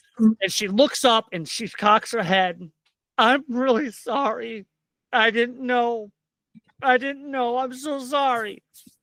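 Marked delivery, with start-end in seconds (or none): 3.2-8.6 tearful, weeping voice, pitched up. Voicing a woman who shuffles up and cocks her head: crying while speaking. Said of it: "and she's crying".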